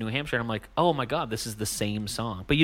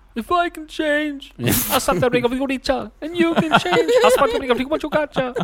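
put-on Russian accent, much higher pitch; 6 dB louder than usual. Told they sound like a film's closing speech, doing it: Rocky IV speech in Russian accent. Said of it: "That's my Russian".

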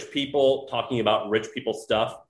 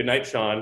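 put-on mean voice. Retelling a good night from his wife: imitating Sarah's mean tone. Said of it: "they say it in such a mean way".

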